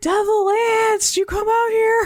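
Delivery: acted, shrill, very high screaming call-out. Retelling a plot scene where Mister McCoy arrives: imitating someone screaming. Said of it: "he's screaming".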